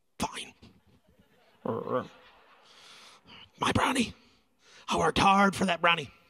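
reluctant, begrudging, put-upon tone. Retelling giving in when a child asks to share: imitating a begrudging reply. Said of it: "I begrudgingly".

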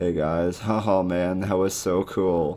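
deadpan, flat monotone with no lift. Telling channel viewers how their enjoyment comes across when spoken, flat monotone. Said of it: "with my monotone ass".

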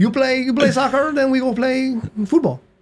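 terrible put-on Mexican accent. Retelling a football story, the speaker quotes the mexican guys in a terrible mexican accent. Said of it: "I've got a terrible accent, but I'm going to do it anyway".

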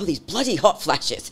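put-on British-accented voice. Retelling what her mother would say: imitating mom's British accent. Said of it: "she was British".

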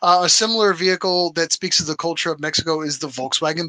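ordinary talk

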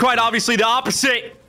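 high-pitched, mocking impression.

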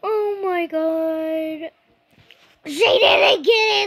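slow, loud drawn-out yell, "god" stretched. Speaking to viewers near the end of a video, yelling. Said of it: "sorry, I'm yelling".

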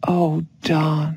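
speaking softly, restrained. A narrator reads Melissa speaking to Don as he appears; soft, controlled voice. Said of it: "she said softly, trying to control her voice".

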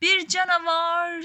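loud, startled, frightened cry. Reading a story, as the little girl shouting at a street cat: shouted. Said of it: "diye bağırdı".

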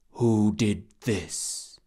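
huge, great rumbling voice. A being far larger than the boy questions him, great rumbling voice. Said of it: "The great rumbling voice said".

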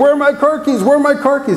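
put-on, shrill, very high screaming. Acting out a spouse searching for car keys: imitating a spouse screaming. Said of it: "a spouse screaming, screaming".

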